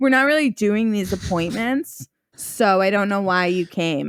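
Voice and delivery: irritated, angry, scolding tone. Retelling what the angry woman said at the appointment: imitating an angry woman. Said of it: "she's like, so mad at me".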